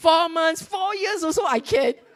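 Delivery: put-on joyous man voice. Retelling a scripture story, acting out the eager applicant: acting out a joyous man. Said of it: "this is him being joyous".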